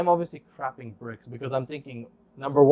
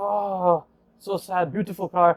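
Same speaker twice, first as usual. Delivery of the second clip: put-on thick Arabic accent, spoken very slowly; 5 semitones higher than usual. Retelling what a guy said to the speaker and a friend, in a thick arabic accent.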